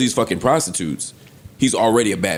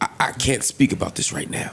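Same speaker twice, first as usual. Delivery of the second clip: put-on stuttering old man voice, quieter; 5 dB quieter than usual. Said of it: "Why you stuttering".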